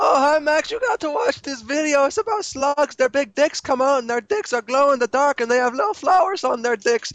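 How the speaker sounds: squeaky, very high-pitched voice. Imitating the other speaker pitching a slug video: imitating a squeaky voice. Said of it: "your voice is al-, squeaky, as always".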